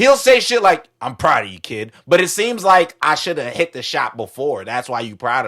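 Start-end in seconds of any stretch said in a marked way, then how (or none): 1.0-1.9 put-on flat monotone voice, lower. Imitating Joel's flat praise from the game: monotone Joel voice. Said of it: "Joel is monotone".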